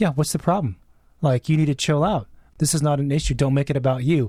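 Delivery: ordinary delivery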